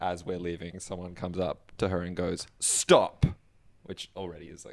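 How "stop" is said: put-on very loud, forceful, aggressive shout. Retelling a stranger stopping someone outside: imitating an aggressive stranger. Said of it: "so aggressive".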